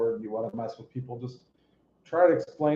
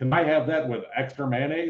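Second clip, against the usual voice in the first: put-on American accent; 3 semitones higher, 3 dB louder than usual. Pretending to be American for a moment: put-on American accent. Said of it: "It's my American accent".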